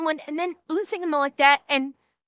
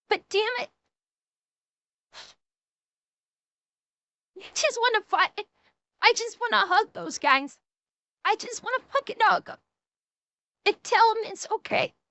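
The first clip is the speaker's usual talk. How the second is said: talking through tears, crying; 5 semitones higher, 3 dB quieter than usual. Reacting during a shoe video, crying while talking. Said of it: "I didn't think I was gonna cry".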